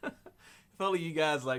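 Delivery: talking through laughter. Telling viewers something funny just happened, laughing while talking. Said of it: "why I'm laughing right now".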